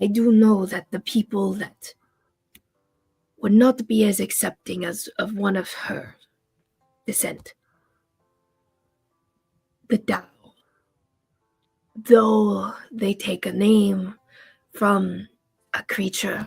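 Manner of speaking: reluctant, distasteful, discreet confiding tone. Voicing a character who leans forward to say something distasteful: lowered voice. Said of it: "he doesn't wanna say it so loud".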